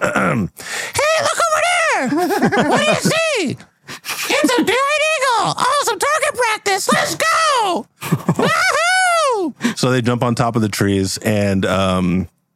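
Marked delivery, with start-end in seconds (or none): 0.0-9.8 very high, animated, swooping goblin-toad creature voice. Voicing a toadstool man who spots a giant eagle: put-on toadstool man voice. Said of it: "So I'm gonna try my best with this".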